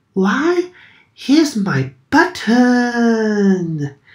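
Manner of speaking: stretched-out high exclamation. A narrator reading a story voices a character, crying out. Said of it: "he cried".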